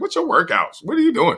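very high, doubtful, skeptical questioning tone. Retelling what she asked about workouts, imitating her skeptical tone. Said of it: "She said it in that tone".

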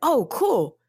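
put-on high-pitched, excited child voice. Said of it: "And she's like".

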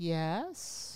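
put-on calm, peaceful voice. Retelling the teacher's first words: imitating a peaceful teacher. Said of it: "very peaceful".

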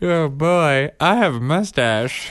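silly animated-character voice. Retelling how he does his impression, speaking in a Goofy voice. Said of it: "I had Goofy to Narwhal".

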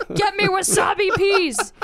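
mock yell, high and loud like a demanding diva.

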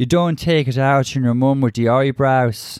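faint, light attempt at an Irish accent. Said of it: "she was attempting some sort of Irish accent".

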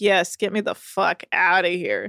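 acted relieved tone, slowed. Recapping a show, speaker voices Hannah as she leaves, mimicking Hannah's relief. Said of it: "relief in Hannah's voice".

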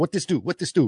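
put-on, harsh-sounding Vietnamese accent. Retelling a woman asking a man about drugs, harsh Vietnamese accent. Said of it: "very like harsh, you know, Vietnamese accent".

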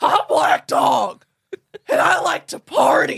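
high, harsh, very loud barking voice. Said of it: "high and harsh".

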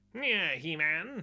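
animated villain voice. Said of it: "quite Skeletor-y".

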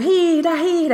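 very high, shrill, loud cheering yell. A mother retells cheering a Finnish skier on TV; retelling shouting at the TV. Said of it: "mä huudan siellä niinku".

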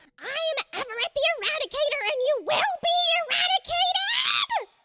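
shrill, very high, furious screeching scream. Voicing a creature attacking the party: angry screeching scream. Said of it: "he screeches in anger and screams".

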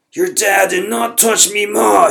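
enraged, very loud, very high, rough scream. Grimly, enraged, screams at the narrator before he charges again. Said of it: "He screamed".

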